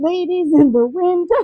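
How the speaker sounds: mock shouted call, high and yelled. Retelling a man yelling up to them at the window, imitating the yell. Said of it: "He's like yelling to us".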